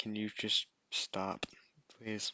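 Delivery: soft, barely audible whispered pleading. Voicing a player character asking another character to stop: whispering in character. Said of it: "Luna's just gonna whisper to".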